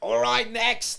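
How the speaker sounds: put-on irate bark, very loud and high. Retelling how the airport breakfast server called the next customer: imitating an angry server. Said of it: "very angry".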